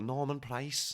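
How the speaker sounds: put-on scouse Liverpool accent. Showing how the kids make them say a name, in a Liverpool accent. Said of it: "In a Liverpool accent".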